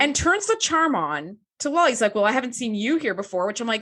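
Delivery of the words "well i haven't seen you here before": put-on Western cowboy voice. Retelling how Riker turns the charm on to Lal: Riker in a Western drawl. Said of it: "you sound straight out of, like, a Western".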